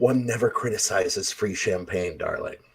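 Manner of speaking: hushed, very quiet theatrical stage whisper. Retelling his own reply to a man who whispered about the champagne, in a stage whisper. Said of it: "a stage whisper".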